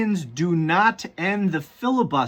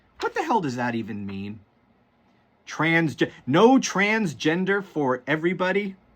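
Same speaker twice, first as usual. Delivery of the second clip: ordinary delivery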